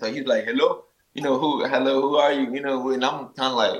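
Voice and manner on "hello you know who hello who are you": put-on Bulgarian-accented speech. Retelling a phone call from a manager from Bulgaria: imitating a Bulgarian accent. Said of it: "he has an accent".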